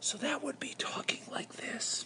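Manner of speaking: very quiet, hushed near-whisper. Explaining a practice activity, demonstrating voice scale one, near whisper. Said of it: "I want to add a voice scale of one".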